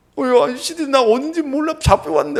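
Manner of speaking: put-on very high, tearful sobbing voice. Retelling a scam phone call, imitating the son on the line: imitating a crying son. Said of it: "막 울면서 얘기하는데".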